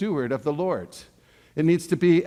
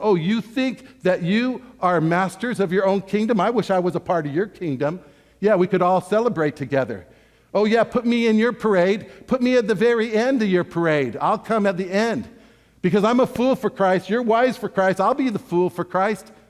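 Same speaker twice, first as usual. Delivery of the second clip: mock, thick, needling sarcasm with a preachy tone; 4 semitones higher, 3 dB louder than usual. Acting out a letter writer's words to a church: imitating sarcastic tone. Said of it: "There's a great amount of sarcasm".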